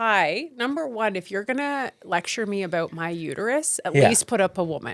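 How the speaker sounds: ordinary talk, nothing marked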